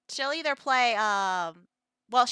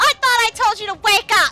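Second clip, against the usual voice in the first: very loud, shrill, angry scolding yell; 11 semitones higher, 12 dB louder than usual. Recalling the woman who came in to wake them, imitating an angry mother. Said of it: "now she was mad".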